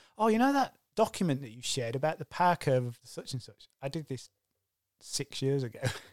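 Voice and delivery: ordinary talk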